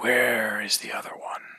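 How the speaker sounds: half-whispered, inner-voice quality. Voicing a totem that speaks into a player's head: half-whispering voice in head. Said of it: "this voice whispers into your head and just says".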